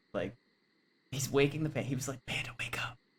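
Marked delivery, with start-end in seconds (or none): 2.2-2.9 soft, breathy whisper under the breath. Retelling how a game character woke the panda: imitating a whisper. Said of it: "whispering to".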